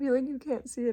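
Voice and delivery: tearful, welling-up, near-crying voice. Telling viewers about crying at a video edit: tearful. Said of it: "I literally have tears falling down".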